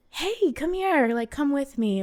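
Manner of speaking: sweet, high, airy, soothing, gentle coaxing voice. Recounting how a woman coaxed a big drunk guy at the bar, Marilyn Monroe voice. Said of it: "like in this like Marilyn Monroe voice".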